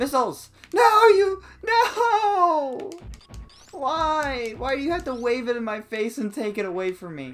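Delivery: freaking out. Player losing health under missile fire in a game: freaking out. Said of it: "I'm freaking out".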